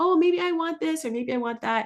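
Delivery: tiny, high, squeaky voice. Contrasting with a clear demand to the universe, a little squeaky voice. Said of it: "a little squeaky voice saying".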